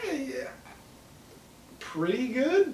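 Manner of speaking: mock, very high-pitched, hesitant, noncommittal voice. Retelling how she answered the odds question: imitating an unconfident reply. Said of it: "really the way she said it".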